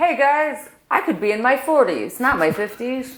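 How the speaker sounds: breezy cool-dad swagger. Joining the bit about the man in the photo: imitating a cool dad. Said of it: "I'm the cool dad".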